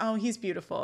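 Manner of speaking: ordinary talk, nothing marked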